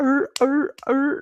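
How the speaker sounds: very high-pitched mocking grunt. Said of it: "but here's your consumers".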